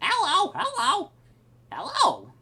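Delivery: very high-pitched, loud talking-parrot voice. In a courtroom story, the parrot speaks up: parrot voice. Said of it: "the old man voice is the same voice as the parrot voice".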